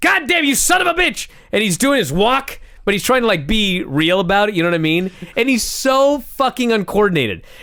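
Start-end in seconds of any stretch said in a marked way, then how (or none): 0.0-1.3 very high, freaked-out, panicked screaming. Telling how a man jumped up after hearing there's a problem, imitating Vince screaming. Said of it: "And he just jumps up and he's screaming".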